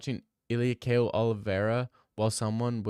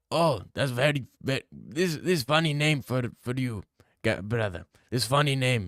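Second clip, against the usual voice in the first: acted tough fighter voice; 2 semitones higher than usual. Acting out Khabib meeting another fighter on request: Khabib voice. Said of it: "Can you do an impression of Habib".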